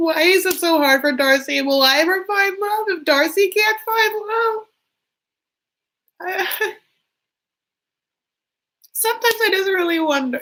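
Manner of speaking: very high, tearful, put-on crying lament. Pretending to cry while wondering aloud about finding love: mock crying. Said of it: "I'm actually crying right now".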